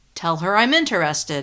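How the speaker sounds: plain reading voice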